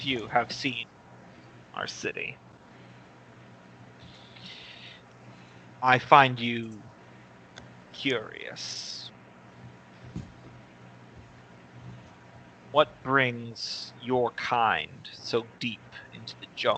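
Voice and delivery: deep, calm, hushed whisper. A prominent jungle figure answers the visiting party in a deep, calm voice. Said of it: "His voice is deep in your heads, but very calm".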